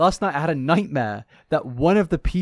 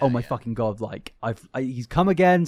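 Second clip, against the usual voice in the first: put-on panicked voice. Retelling own thought when something can't be found: imitating own panic. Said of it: "I start panicking".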